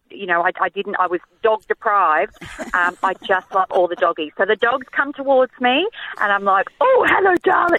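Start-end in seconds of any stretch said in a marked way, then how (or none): 6.8-7.8 very high, sweet, cooing voice. Speaker retelling how she greets dogs coming towards her, dog voice. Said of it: "dog voice".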